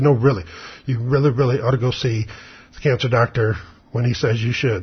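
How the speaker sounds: usual speaking voice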